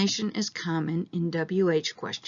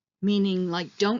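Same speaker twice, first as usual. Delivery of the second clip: plain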